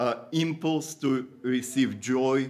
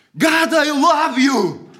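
desperate screaming cry, very high, very loud, drawn-out; 11 dB louder than usual. Retelling screaming out when unable to focus past jumbled thoughts, retelling a scream. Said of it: "I just screamed".

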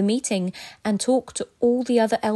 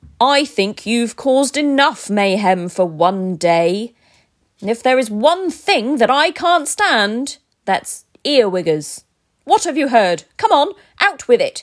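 loud bellowing roar that keeps building; 7 dB louder than usual. Aragorn confronts two elves caught in his room; roaring. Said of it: "he roared".

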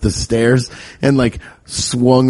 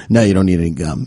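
play-acted stern, angry, irritated dad voice; 4 semitones lower than usual. Retelling a father refusing gum in a store: imitating a mad, quiet dad. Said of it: "My dad would get so mad and quiet in stores".

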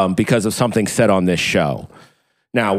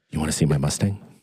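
put-on whisper, quieter and lower in pitch; 6 semitones lower, 6 dB quieter than usual. Imagining someone whispering in her ear, acting out a whisper. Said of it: "whispering in her ear".

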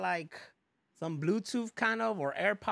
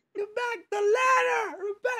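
put-on scream, higher and louder; 6 dB louder than usual. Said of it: "he's screaming at him".

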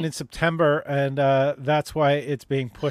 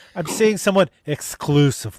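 exclusively made to sound negative, like a dirty word. Imitating another speaker's inflection: imitating exclusively said like a bad word. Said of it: "how she did the inflection on that?".

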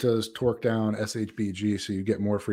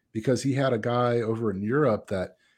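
ordinary delivery

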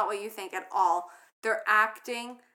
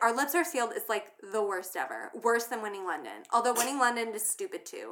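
normal talking voice

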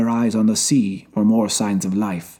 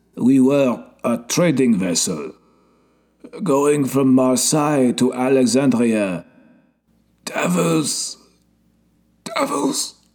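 hoarse groaning voice; 3 semitones higher than usual. A man tells his story after giving back the little bird, hoarse and groaning. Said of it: "he told his story in a hoarse, groaning voice".

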